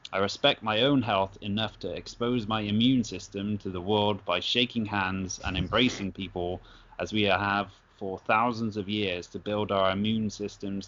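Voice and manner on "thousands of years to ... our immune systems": normal talking voice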